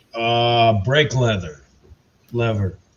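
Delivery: dry, sarcasm-laced, joking tone. Answering a multiple-choice quiz question: sarcastic tone. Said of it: "I can hear the sarcasm in your voice".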